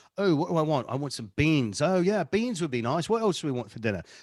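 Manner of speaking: put-on British accent. Retelling talking aloud while shopping: Nigel voice with British accent. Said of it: "when Nigel really comes out".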